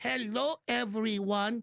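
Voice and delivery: high, slow mock Spanish accent.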